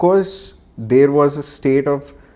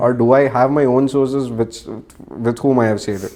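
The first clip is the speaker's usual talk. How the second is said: normal talking voice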